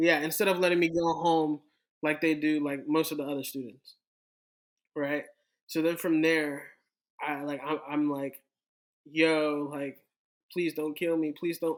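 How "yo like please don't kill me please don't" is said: pleading, begging tone. Retelling own words to police at the drunk tank: retelling own pleading. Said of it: "I'm just pleading".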